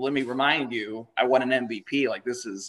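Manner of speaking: plain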